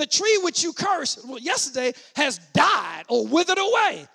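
mock worked-up, eager, excited tone. Retelling a Bible story and acting out one man's line, mock-excited. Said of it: "He's all excited about it".

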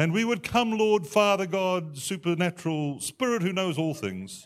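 pious preacher-style voice. Mocking a style of prayer the speaker has no time for, in a put-on holy voice. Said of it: "with this put-on holy voice".

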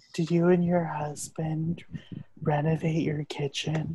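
very quiet, soft, unsettling murmur. Voicing the character Creepy Crystal speaking to someone, Creepy Crystal voice. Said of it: "I'll be Creepy Crystal's voice".

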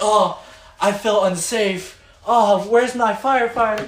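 high, loud, swooning, fainting damsel voice. Mocking a classmate as a joke: mock fainting damsel voice. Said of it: "that's gonna be a joke in front of him".

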